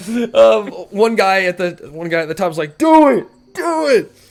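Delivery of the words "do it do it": very high, slow, drawn-out cheering shout. Voicing a pirate egging on a fight from above: pirates yelling to egg on. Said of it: "yelling at them to, to go".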